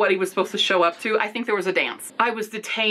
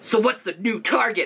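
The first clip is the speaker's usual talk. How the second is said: rough, gruff voice. Reading own story aloud, a henchman asks about the target: gruff voice. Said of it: "a gruff voice asked".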